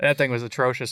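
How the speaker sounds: normal talking voice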